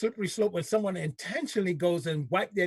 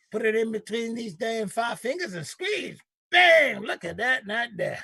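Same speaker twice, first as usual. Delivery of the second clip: put-on fake Southern accent; 3 semitones higher, 3 dB louder than usual. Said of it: "Please, not in that accent".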